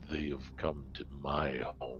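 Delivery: deep, low, very quiet voice. A voice from the wall speaks as the floor shifts, in a deep voice. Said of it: "that deep voice emanating from the wall says".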